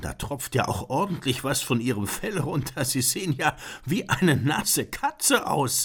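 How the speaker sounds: very high voice, laughing through the words. Narrator reads the composer speaking to the werewolf, laughing. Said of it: "lachte Beethoven".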